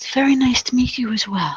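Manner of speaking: very soft-spoken, hushed, quiet voice. Playing an elderly woman returning a greeting, in an incredibly soft voice. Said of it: "she speaks with an incredibly soft voice".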